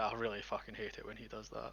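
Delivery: very soft, quiet grumbling mutter under the breath. Muttering in character at a figure who keeps vanishing: muttered under breath. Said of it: "Under my breath".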